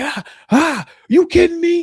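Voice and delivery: very high, shrill, drawn-out screaming and yelling. Describing how Officer Tatum behaves on his podcast, imitating Officer Tatum screaming and yelling. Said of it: "He's like screaming and yelling".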